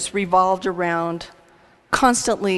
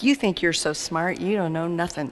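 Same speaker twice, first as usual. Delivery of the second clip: scornful, hateful, angry sneering tone; 4 dB quieter than usual. Retelling a father's questions to a child: imitating a sneering, angry father. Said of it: "critical, sneering, angry, hateful".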